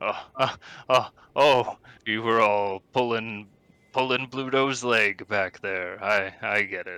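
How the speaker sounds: nervous laughter while talking. Voicing a character who starts to chuckle: nervous chuckling while talking. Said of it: "he starts to chuckle a little bit".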